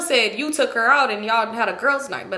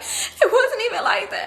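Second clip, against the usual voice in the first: weepy, high, tearful crying voice; 11 semitones higher than usual. Retelling how a girl sat crying in the car, the speaker quotes her: imitating someone crying. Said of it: "She's crying like".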